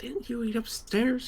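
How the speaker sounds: said quietly. Character questioning someone who wants a meal paid for, said quietly. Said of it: "I say quietly".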